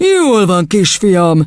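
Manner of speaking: foreboding, ominous, menacing voice. Narrator reads the headmistress addressing a boy, ominous voice. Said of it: "folytatta vészjósló hangon".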